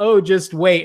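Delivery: smug, knowing tone. Retelling own remark while watching a movie: imitating own smug remark. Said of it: "And I say that really smugly".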